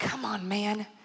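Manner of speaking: muttering under breath. Retelling getting cut off while driving, muttered under breath. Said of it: "under my breath".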